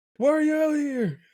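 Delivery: very high-pitched, furious, demanding tone. Imitating a character shouting at a mannequin outside: imitating angry Will Smith.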